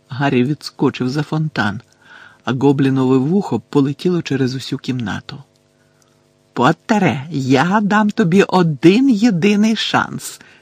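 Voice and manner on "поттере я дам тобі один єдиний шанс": slow, deliberate, high, drawn-out cry. Bellatrix calls to Harry, who is hiding behind the fountain; shouted. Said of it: "крикнула Белатриса".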